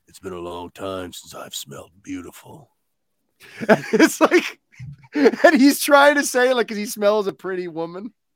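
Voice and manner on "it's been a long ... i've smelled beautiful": much lower, softer, deep action-hero rumble. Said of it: "that deep Vin Diesel voice".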